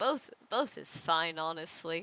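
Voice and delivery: hushed, muttered under the breath. Voicing a character answering a question about revenge: muttering under his breath. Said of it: "he just mutters under his breath".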